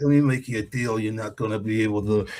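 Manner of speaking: mob-boss tough-guy voice. Imitating a game character who talks like a mob boss: Robert De Niro voice. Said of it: "why do you sound like, like Robert De Niro?".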